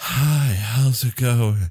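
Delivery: slow, airy voice, breathy exhale trailing words. Showing the breathing habit at the end of words: airy breath effect. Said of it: "I try to do the airy breathe effect".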